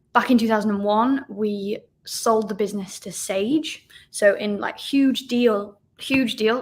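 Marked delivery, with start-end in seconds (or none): 4.1-6.6 voice cracking and breaking mid-phrase. Recounting the sale of their business, voice cracking. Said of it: "my voice cracked then".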